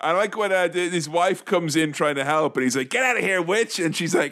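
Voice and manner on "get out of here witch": put-on over-the-top New York accent, pitched up. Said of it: "an over-the-top New York guy".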